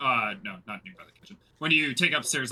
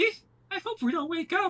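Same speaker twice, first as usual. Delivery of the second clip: put-on very high little-kid voice. Voicing a doll speaking to a player in bed: child's voice. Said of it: "In a child's voice".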